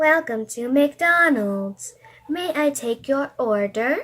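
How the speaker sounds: mechanical robot voice like a speaker-box machine. Reading a drive-thru order machine's greeting in a story, in a robot voice. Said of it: "I'm gonna talk like a robot".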